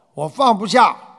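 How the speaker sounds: loud frustrated complaining tone.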